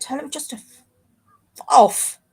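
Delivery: mischievous, naughty, regal voice. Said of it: "This is Philippe. And he's saying".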